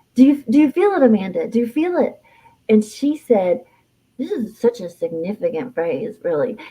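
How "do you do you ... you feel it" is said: bursting with excitement, very high and swooping pitch. Retelling a moment as city lights came on, quoting Katie by imitating Katie's excited voice. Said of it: "in a very excited voice".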